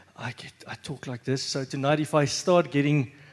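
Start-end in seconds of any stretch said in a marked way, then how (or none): 0.2-1.5 soft, quiet, toned-down serious voice. Showing how the voice gets quiet when serious: quiet soft voice. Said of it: "So if I get quiet".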